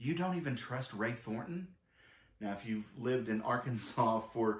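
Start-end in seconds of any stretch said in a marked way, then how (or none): 0.0-1.7 put-on stunned, thrown, shocked, disbelieving tone. Recalling Greg reacting when she named the only people she trusts; imitating Greg's shocked voice. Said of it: "spoke with a shocked voice".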